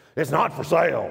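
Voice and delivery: gruff voice, blunt and curt. Retelling the land's owner refusing to sell: imitating a gruff voice. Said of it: "he just had a gruff voice".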